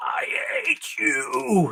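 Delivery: very high cry, wavering wildly and swooping wide. Retelling a Star Wars scene, crawling with one arm: Anakin impression. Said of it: "Anakin got all his".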